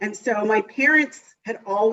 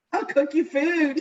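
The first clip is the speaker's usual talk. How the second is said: acted-out, put-on yell, much higher pitch; 7 semitones higher than usual. A fan recalls yelling to a player at a match, retelling a yell. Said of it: "I just kind of yelled out".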